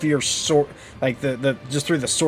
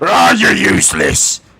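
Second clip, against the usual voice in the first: deep, very low, very loud booming orc bellow; 9 semitones lower, 11 dB louder than usual. Describing a missed swing, the speaker voices the other orcs: orc voice. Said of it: "the other orcs. It's like".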